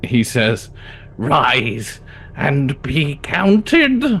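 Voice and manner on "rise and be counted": exaggerated goblin voice, slow and drawn out. Voicing a goblin who jumps on the table, arms in the air: goblin voice. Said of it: "in his most like goblin of goblin voices".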